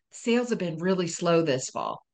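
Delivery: mock whispering. Retelling what an employee said during a shop visit: imitating someone whispering. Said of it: "The employee whispers to me".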